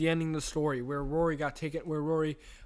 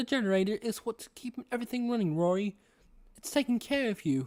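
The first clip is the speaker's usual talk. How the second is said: affected, put-on British accent, pitched up throughout; 6 semitones higher than usual. Voicing a figure who talks to rory about the generator, in a british accent. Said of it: "in a British accent".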